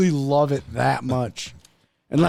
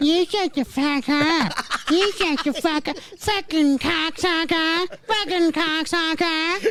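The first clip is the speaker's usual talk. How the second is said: mocking put-on parrot voice, higher. Playing a parrot that mocks its dying owner: imitating a mocking parrot. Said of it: "your fucking parrot's mocking you".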